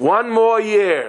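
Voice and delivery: put-on high loud call. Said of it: "he just calls out from on top".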